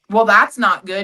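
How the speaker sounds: put-on cocky delivery. Retelling what was said during a traffic stop: imitating a cocky tone. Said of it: "Just so fucking cocky, bro".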